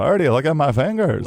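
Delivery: put-on high-pitched old basketball coach voice. Retelling how an old basketball coach with broken pinkies talked: imitating John Butterfield. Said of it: "He's like".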